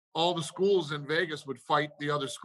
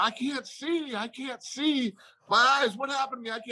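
put-on scream, much higher pitched and slower; 9 semitones higher than usual. Recounting a guy Chuck let go of after a guillotine, retelling a guy screaming. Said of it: "he's screaming".

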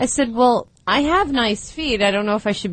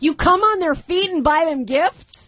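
loud, high-pitched, blurted out; 7 semitones higher than usual. Retelling what they said to a man in a restaurant, saying it kind of loudly. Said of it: "and I said kind of loudly".

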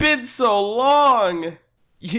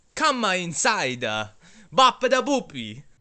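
phony put-on Italian accent. A pizza shop character invites customers inside, fake italian accent. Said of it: "That is the fakest Italian accent I've ever heard".

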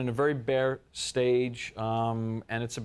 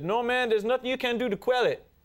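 put-on Cajun accent, very high pitch; 11 semitones higher than usual. Retelling what a man on the phone answered him, in a cajun accent. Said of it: "that's a Cajun accent".

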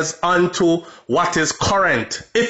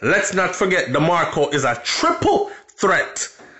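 voice cracks on the words 'triple threat'. Speaker calling DeMarco a triple threat: voice cracks on 'triple threat'. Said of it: "You hear my voice crack when I say triple threat".

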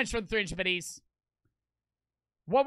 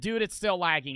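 plain

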